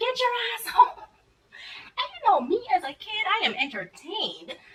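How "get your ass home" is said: furious, high, loud scolding scream. Retelling a godmother ordering her home: imitating someone screaming. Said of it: "She starts screaming at me like".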